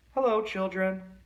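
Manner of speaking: sweetly spoken, high voice. Narrator reads someone greeting the children from the hall: sweet voice. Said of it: "someone said in a sweet voice".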